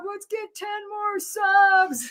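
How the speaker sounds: mock hyped, high, very slow, drawn-out delivery.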